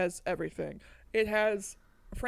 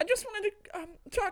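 very high-pitched voice, done badly; 11 semitones higher than usual. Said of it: "trying to do a [name] impression".

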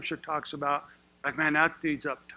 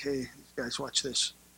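mock playful, smiling, grinning aside, much quieter; 3 semitones lower, 6 dB quieter than usual. Retelling a mother's plea for help, acting out the reply: acting out a smiling aside. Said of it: "can you see him smiling".

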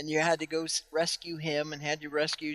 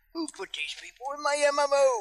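put-on cranky old man voice, higher; 10 semitones higher, 3 dB louder than usual. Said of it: "cornered the old man market".

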